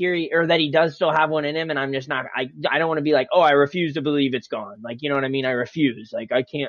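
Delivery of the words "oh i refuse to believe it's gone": usual speaking voice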